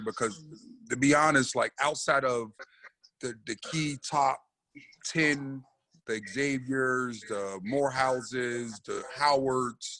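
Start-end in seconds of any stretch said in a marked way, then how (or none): 6.1-10.0 slow, drawn-out delivery, each word taken slowly. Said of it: "I'll talk a little slow".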